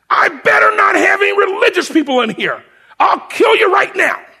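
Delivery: very high-pitched, full scream. Retelling a sergeant screaming at the unit: imitating Sergeant Beck screaming. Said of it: "Sergeant Beck starts screaming".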